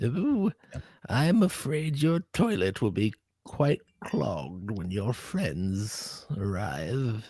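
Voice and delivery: grunting, strained, bearing-down villain voice, constipated-sounding. On a podcast, a host keeps up a joke voice after another host mocks it: put-on constipated-sounding voice. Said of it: "when you do that voice, it just sounds like you're constipated".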